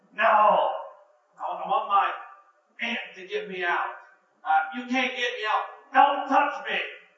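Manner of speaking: put-on loud tantrum yelling, like a kid losing it. Retelling how a four-year-old reacted when his mother came to get him out: retelling someone yelling. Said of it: "he starts yelling".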